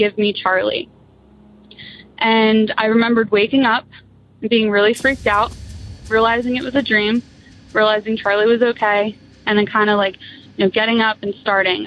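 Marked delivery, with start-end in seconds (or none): 0.0-0.9 put-on evil demonic voice. Recounting a dream, quoting a voice from the dark basement, in a demonic voice. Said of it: "I heard a demonic voice say".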